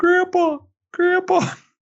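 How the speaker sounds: tiny, squeaky, very high mouse voice. Retelling how a big kid cousin called out when scooped up: tiny mouse voice. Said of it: "It sounds like a little tiny mouse going".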